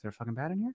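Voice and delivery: very quiet muttering under the breath. Retelling a line muttered onstage to a brother: retelling words said under breath. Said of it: "under my breath".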